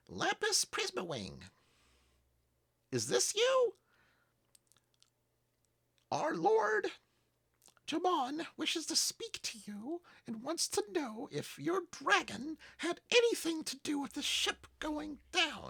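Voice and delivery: very high, tiny, squeaking gnome voice. A game master voices a gnome's message spell to Lapis; squeaky gnome voice. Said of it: "squeaky gnome voice".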